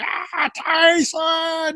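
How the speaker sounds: very high, shrieking scream. Retelling a wrestler's moment at the end: imitating someone screaming. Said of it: "He's just screaming".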